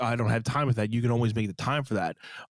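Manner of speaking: usual speaking voice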